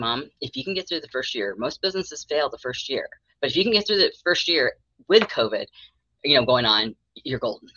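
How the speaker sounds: plain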